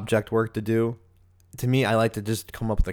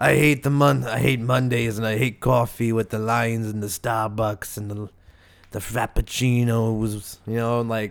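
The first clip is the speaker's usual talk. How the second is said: put-on Yiddish-tinged accent, said louder; 4 dB louder than usual.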